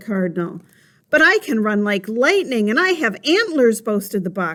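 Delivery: ordinary delivery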